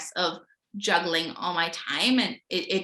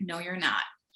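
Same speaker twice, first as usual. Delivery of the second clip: put-on calm but stern voice; 4 dB quieter than usual. Retelling a friend's reply to being told I'm fine: imitating a calm but stern tone. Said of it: "calmly, but, like, very sternly was like".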